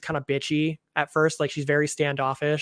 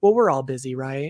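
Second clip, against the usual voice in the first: put-on condescending tone; 4 dB louder than usual. Recapping a TV scene, quoting one character to another, mimicking a condescending tone. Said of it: "he's just so fucking condescending".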